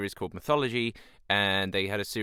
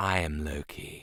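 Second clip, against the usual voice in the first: throaty voice with a slight rasp; 6 semitones lower, 5 dB quieter than usual. Showing how to voice Loki: throaty, slightly raspy Loki voice. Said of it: "a very throaty, or at least it's quite raspy".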